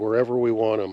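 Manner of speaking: plain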